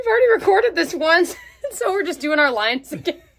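loud, high laughing through the words. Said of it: "I'm laughing".

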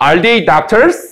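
gentle upward rise in pitch at the end on doctors. Korean lesson on english yes-no questions, slight rise at end on doctors. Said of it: "이렇게 살짝 올려 읽어요".

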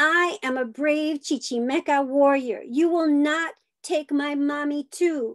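high-pitched loud shout. A child holding her mother shouts at the man grabbing her, shouting loud. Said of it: "shout loud at him".

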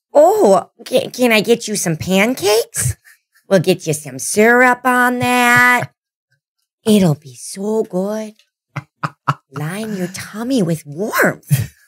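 high-pitched grandma voice with Minnesota accent. Doing the promised Minnesota voice for the folks watching, Minnesota accent. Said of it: "We gotta hear in the Minnesota voice".

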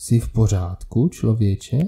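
plain reading voice

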